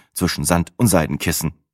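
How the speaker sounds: ordinary delivery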